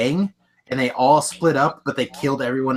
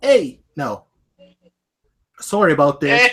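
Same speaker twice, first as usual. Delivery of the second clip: deliberate put-on Canadian accent, slow and raised; 3 semitones higher, 5 dB louder than usual. Showing what a canadian accent sounds like: put-on canadian accent. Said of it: "Canadian accent's like".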